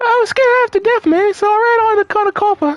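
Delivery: very high-pitched, put-on woman's voice. Voicing a character again after being told the voice: high-pitched put-on woman's voice. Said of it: "It was just high pitch".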